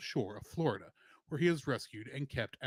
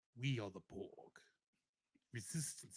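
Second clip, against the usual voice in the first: bad Spanish accent, low, hushed, barely audible; 4 semitones lower, 11 dB quieter than usual. Trying out an accent after being told to do it, bad Ricardo Montalban impression. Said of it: "This is not a good Spanish accent".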